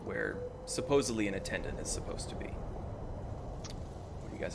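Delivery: spooky whisper.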